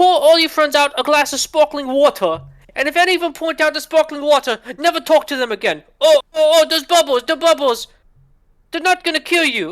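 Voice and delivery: put-on British accent. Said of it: "he talks with a British accent".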